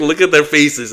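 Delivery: high, mild drill-sergeant yelling. Retelling being screamed at beside a line of young guys, retelling a scream. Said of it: "He's screaming".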